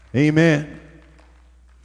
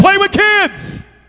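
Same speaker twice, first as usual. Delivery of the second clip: high, loud, slow, hyped-up, excited gush. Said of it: "us all hyped up".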